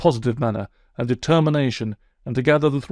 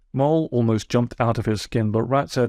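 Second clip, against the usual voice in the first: ordinary delivery, nothing marked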